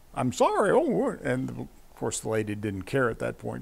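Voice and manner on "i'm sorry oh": very high-pitched dummy voice. Retelling how the ventriloquist answered an insulted lady, in Elmer's dummy voice. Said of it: "in Elmer's voice".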